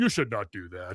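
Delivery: odd, robotic, chatbot-style delivery. Imitating the therapist program answering a typed message: weird Dr. Spazo robot voice. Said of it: "respond to you in this weird robot voice".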